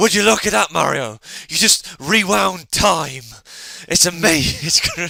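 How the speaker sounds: put-on gravelly voice. Speaker imitating a Let's Play video maker reacting in his game: raspy put-on voice. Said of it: "proper raspy voice".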